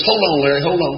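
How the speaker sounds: ordinary talk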